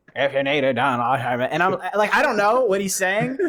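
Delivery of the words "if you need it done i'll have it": mumbling through half-shut side of mouth, sailor-like. Retelling a movie scene as Quint: imitating Quint's half-shut mumble. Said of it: "talks like a sailor whose half of his mouth is shut".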